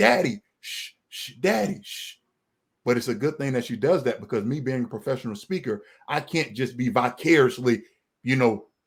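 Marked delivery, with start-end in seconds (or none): 0.0-2.2 put-on high, slow two-year-old shushing voice. Retelling how a two-year-old daughter hushes a loud father: imitating a toddler shushing. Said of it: "my two-year-old ... she's like".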